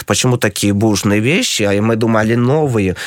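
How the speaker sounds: ordinary delivery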